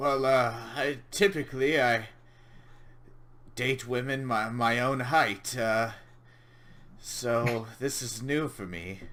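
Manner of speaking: uneasy, anxious, nervous voice. Game master voicing a character answering the half-elf player: nervous tone. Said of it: "he says in a very kind of nervous tone".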